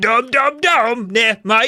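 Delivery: Australian accent slipping in. Trying for a British accent while retelling a line: accidental Australian accent. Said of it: "damn Australian again".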